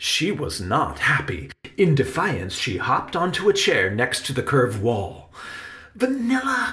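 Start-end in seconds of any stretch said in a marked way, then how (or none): 5.9-6.7 urgent hushed cry, very high. Narrator reading Benny calling after Vanilla, who crawled out of his pocket; crying out as quietly as possible. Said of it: "Cried Benny as quietly as he could".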